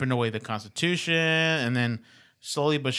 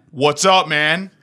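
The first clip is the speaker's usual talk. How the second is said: a bit deeper than normal voice; 4 semitones higher, 10 dB louder than usual. Trying the greeting again after being told to go deeper, in a deeper than normal voice. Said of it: "Not quite that deep".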